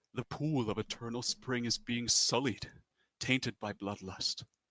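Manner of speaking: sorrowful, grieving, distraught voice. A game master voices a creature that opens its eyes and addresses the players, in a sad voice. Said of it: "in a sad voice".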